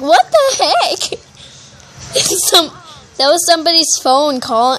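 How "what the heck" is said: high, stunned, laughing exclamation. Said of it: "I was like".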